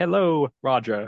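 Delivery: British text-to-speech computer voice. Retelling a prisoner's text-to-speech phone message in an astute British accent. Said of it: "very much a uh, astute British accent".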